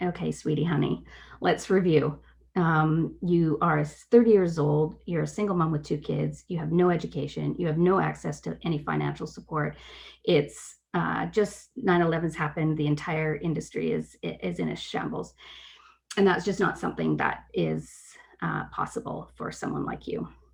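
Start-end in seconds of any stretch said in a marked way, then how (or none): none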